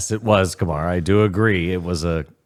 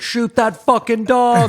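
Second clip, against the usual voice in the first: sudden, shrill, very high-pitched yell; 5 dB louder than usual. Retelling the cops kicking in the door and throwing a flashbang, imitating Bill Burr yelling out. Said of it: "yell out".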